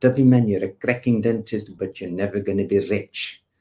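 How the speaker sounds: loud, best-effort put-on South African accent. Retelling what a South African man told the speaker, in a put-on South African accent. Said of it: "this is my best South African accent".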